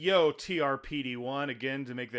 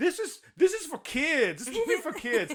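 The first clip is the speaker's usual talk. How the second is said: higher, imitated woman's voice; 13 semitones higher, 3 dB louder than usual. Joking that a movie is too much for kids: imitating a woman's voice. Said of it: "I'm just trying to imitate her voice".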